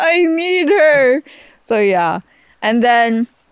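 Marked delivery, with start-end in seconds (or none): 0.0-1.2 put-on crying voice, higher and louder. Retelling a video of someone after the speaker left: imitating Tito Bobby crying. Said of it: "crying, saying".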